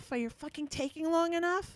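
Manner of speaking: put-on yelling. Retelling a driver yelling from his pickup truck: imitating someone yelling. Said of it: "the guy yelled at me".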